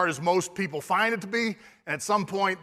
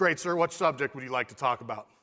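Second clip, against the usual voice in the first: put-on confident voice, lower; 5 semitones lower than usual. Retelling a kid's answer to a big man: imitating a confident reply. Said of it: "taken aback by his confidence".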